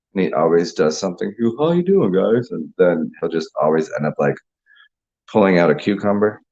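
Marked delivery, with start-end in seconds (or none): 1.6-2.5 high-pitched puppet frog character voice. Retelling a video where a guy with a puppet does the Kermit the Frog voice. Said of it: "he does the Kermit voice".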